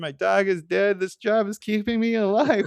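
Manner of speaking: put-on sad voice. Retelling a scene, quoting a retiring worker: imitating a sad voice. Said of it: "he's so sad because he's like".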